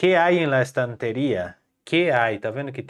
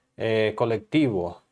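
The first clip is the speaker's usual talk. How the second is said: normal talking voice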